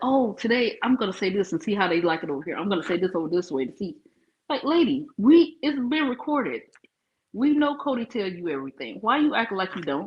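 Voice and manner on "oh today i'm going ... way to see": sarcastic, fickle, approval-seeking, wavering tone. Complaining that Robin keeps changing her story, imitating Robin. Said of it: "it's like she, it's like".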